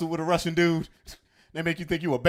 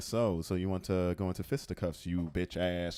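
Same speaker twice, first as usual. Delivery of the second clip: mock calm voice, much lower, quieter; 11 semitones lower, 10 dB quieter than usual. Acting out how he sounded before his fights, imitating a calm voice. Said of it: "like he was just being calm".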